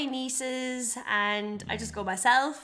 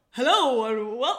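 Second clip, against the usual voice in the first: put-on, mock manly voice; 4 dB louder than usual. Asked to do an impression of Will: manly impression of Will. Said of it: "Do an impression of Will".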